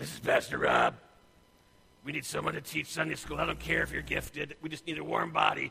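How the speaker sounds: rough, harsh, very gruff, very loud bark. Hypothetical phone call asking for a Sunday school teacher, very gruff voice. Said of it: "said in a very gruff voice".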